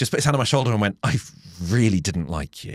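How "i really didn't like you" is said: words forced out between clenched, gritted teeth. Retelling what a man said, hand on their shoulder, through gritted teeth. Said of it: "he said through gritted teeth".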